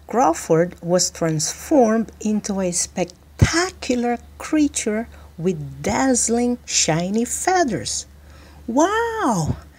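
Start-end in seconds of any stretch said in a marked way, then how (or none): 8.6-9.5 very high, drawn-out cry of wow. Narrator reading a character looking himself over after a transformation, crying out. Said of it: "cried Crawford as he looked himself over".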